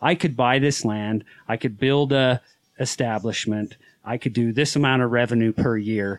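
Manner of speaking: plain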